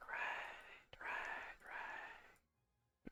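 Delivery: soft, bitter whisper.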